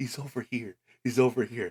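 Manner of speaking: giddy, eager, bursting with glee. Retelling a backstage scene, imitating Tony Khan grinning gleefully. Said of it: "standing up with the biggest grin on his face, like a kid in a candy store".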